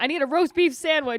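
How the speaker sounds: very loud, high street yell. Retelling passing a guy on the street: imitating a man yelling. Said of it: "yelling out super specific asks".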